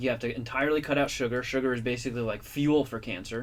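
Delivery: ordinary talk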